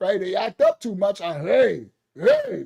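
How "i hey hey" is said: mock serious, stern dad voice. Showing how he talks when his kids act up too much, serious voice with his kids. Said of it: "that voice".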